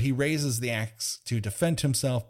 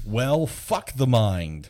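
shouted yelling; 4 dB louder than usual. Quoting a cop from a movie: imitating a cop yelling.

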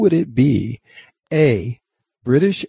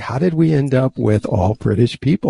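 normal talking voice

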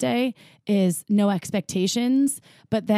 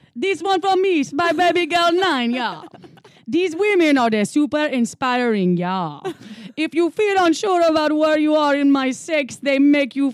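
put-on Jamaican accent, higher; 6 semitones higher than usual. Reading a message from Baby Gal 9 aloud in a Jamaican accent. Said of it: "Should I do one in a Jamaican accent?".

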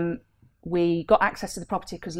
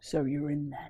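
low, quiet, deep voice. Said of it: "I heard this deep voice going".

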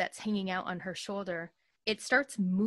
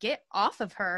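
ordinary delivery

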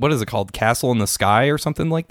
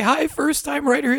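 much higher, raised-register put-on voice. Reading a listener's email aloud to a co-host, in a higher register voice. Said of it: "I do it in this higher register".

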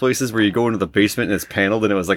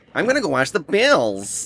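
put-on Western New York accent, nasal A; 7 semitones higher than usual. Joking about western new york speech, doing a put-on nasal western new york accent. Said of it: "Very good nasal A".

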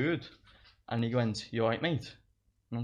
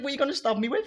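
very high, incredulous, laughing, taunting tone; 5 dB louder than usual. Retelling a confrontation with a man who pulled nothing out, retelling a laughing reply. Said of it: "I just started laughing".

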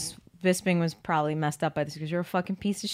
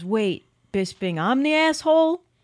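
put-on Long Island accent, high-pitched and slow; 7 semitones higher, 3 dB louder than usual. Retelling what Chris Weidman said back, Chris Weidman impression with Long Island accent. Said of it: "I'm trying to do a Long Island accent".

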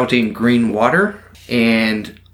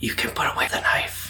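hushed, very quiet whispered words; 9 dB quieter than usual. A game master voices a character whispering into Drew's ear, whispering. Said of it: "You hear him whisper".

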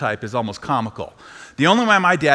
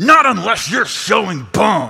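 put-on, high, drawn-out, furious coach's yell; 6 semitones higher, 4 dB louder than usual. Retelling how your dad yelled at a player begging to come out of the game: retelling a yell. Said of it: "He yells".

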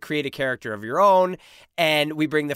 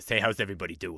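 deep, very low, soft voice; 6 semitones lower, 6 dB quieter than usual. Pitching how the groomed dog on the show should sound, against-type voice for the dog. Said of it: "I would play against type, and I would say she sounds like this".

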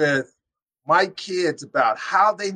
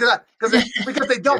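heated, worked-up, fired-up voice with raised pitch; 6 semitones higher than usual. A father speaking about his children, fired up. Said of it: "I'm getting a little fired up here".

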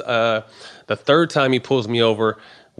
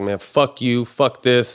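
slow, put-on, fed-up, pissed-off angry blow-up. Retelling an argument over impounding his car: imitating own angry outburst. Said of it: "So I get pissed".

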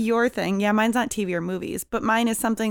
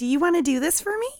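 put-on childlike voice, much higher; 8 semitones higher than usual. Showing how they usually talk to children, talking like a child. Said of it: "I usually talk more like a child".

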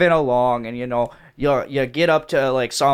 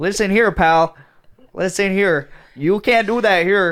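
little Scottish policeman character voice; 6 semitones higher than usual. Acting out a policeman scolding someone at a wake: little Scottish policeman voice. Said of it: "little scotty policeman comes up".

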